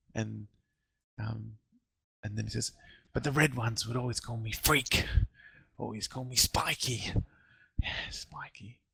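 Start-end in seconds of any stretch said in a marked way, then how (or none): 3.2-7.1 strange, muddled voice. Voicing a Nothic answering a player's question about its name: odd, addled Nothic voice. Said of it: "he's quite odd and riddled in the brain".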